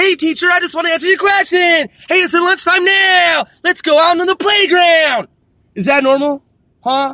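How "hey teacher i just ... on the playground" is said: put-on, high cartoon little schoolgirl voice. Speaker complaining about a cartoon, mimicking how its little girl talks in class: imitating a cartoon little girl. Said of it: "What little girl on earth talks like this".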